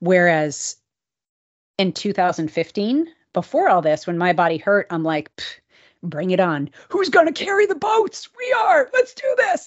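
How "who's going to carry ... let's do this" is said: put-on yelling, very high and climbing higher. Recalling how you pushed on when your body hurt in 2015, do a yelling David Goggins imitation. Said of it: "why I'm yelling about boats".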